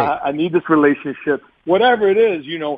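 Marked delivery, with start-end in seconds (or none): none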